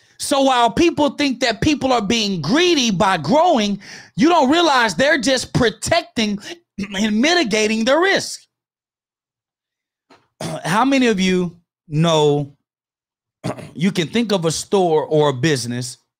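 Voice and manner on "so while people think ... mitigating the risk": fired-up, passionate yelling, pitched high. A speaker teaching a crowd, yelling passionately. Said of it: "sorry if I'm yelling".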